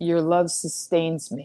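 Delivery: lifeless, low-energy mumble with no energy left. Retelling replies to a friend's phone calls during heartbreak: imitating a low-energy mumble. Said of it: "I would mumble with no energy".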